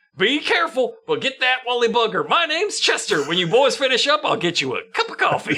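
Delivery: high, full-on hee-haw hillbilly voice. Retelling what a hillbilly said out of a window: imitating a hee-haw hillbilly. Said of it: "It's a full-on hee-haw bit".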